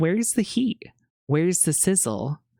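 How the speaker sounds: mock underwhelmed, unimpressed tone. Sharing a favorite quote, acting out someone being unimpressed. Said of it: "Cheryl was unimpressed and she was like".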